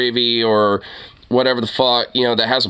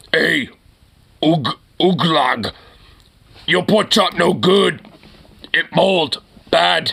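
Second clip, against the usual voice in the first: put-on slow, broken caveman talk; 4 semitones higher than usual. Reacting to a boyfriend's messages, mocking him: mock Neanderthal speech. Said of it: "he literally is speaking like a Neanderthal".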